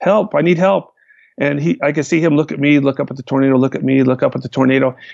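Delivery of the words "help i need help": yelling. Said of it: "And I'm yelling".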